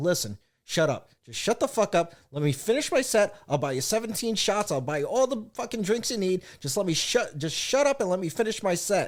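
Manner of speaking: angry, heated outburst. A comic retells a woman screaming through his set, acting out getting pissed off. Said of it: "I'm starting to get a little pissed off".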